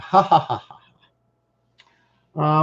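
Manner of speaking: high-pitched, fake, mock laugh. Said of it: "Laugh out loud".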